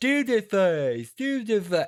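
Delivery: put-on voice with the nose held. Complaining about an audiobook reading, doing Neville's pinched-nose voice. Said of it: "holding his nose the entire time".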